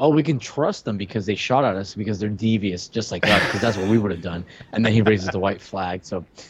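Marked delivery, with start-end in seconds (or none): none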